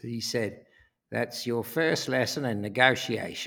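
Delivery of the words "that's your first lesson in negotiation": put-on Australian accent. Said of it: "he said in that very Australian".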